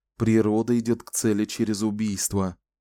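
plain reading voice

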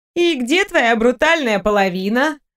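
sarcastic, snide, stretched-out drawl. Rozevski asks a question: snide drawl. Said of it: "ехидно протянула Розевски".

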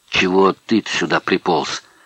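ordinary delivery, nothing marked

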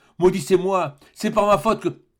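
high, anguished, remorseful crying out. Narrator reads a servant crying out to his master. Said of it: "s'écria-t-il".

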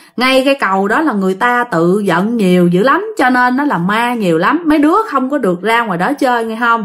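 normal talking voice

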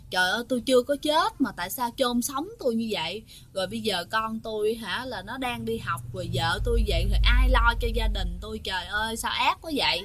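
ordinary talk

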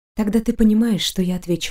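ordinary delivery, nothing marked

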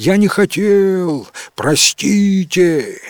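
high, slow, abashed call, "хотел" drawn out. Elmar calls after the fleeing knight and horse, an embarrassed shout. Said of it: "смущенно крикнул им вслед Элмар".

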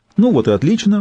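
cheerful, bright, high chirping voice. A woman breaks a tense moment among the others, cheerful chirp. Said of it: "бодро прощебетала Айсис".

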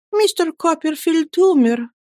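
trembling voice. Narrator reads the mother's reply to Miss Betsey: trembling voice. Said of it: "дрожащим голосом сказала матушка".

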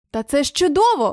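sudden exclamation, words cried out. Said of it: "вигукнув Чарлі Блек".

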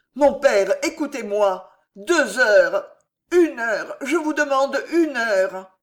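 crying out, distressed. Narrator reading a novel; a son, wringing his hands, speaks to his father: cried out, wringing hands. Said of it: "cria François en se tordant les mains".

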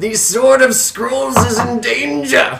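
put-on wizened old man voice, high and slow. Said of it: "this wizened old man".

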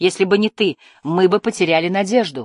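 plain

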